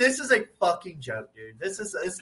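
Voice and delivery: ordinary talk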